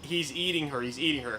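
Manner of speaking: ordinary delivery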